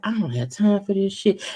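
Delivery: put-on, mock-nonchalant, laid-back monotone. Retelling what Anthony said, imitating Anthony's monotone. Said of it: "nonchalant, laid back, uh, monotone vibe".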